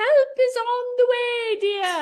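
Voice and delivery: very high, loud yelling.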